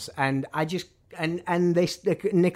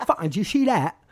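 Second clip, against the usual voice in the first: put-on Essex English accent; 5 semitones higher, 3 dB louder than usual. Retelling what a man said to him after shooting footage, Essex accent impression. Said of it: "that's my impression of an Essex accent".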